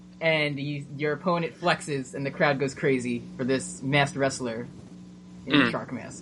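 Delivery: ordinary delivery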